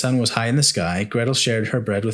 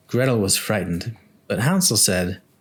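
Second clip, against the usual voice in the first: ordinary delivery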